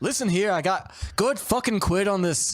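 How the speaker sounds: put-on shifting accent, English to Irish. Retelling a film scene, imitating Sean Bean with an ever-changing accent. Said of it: "your ever-changing accent".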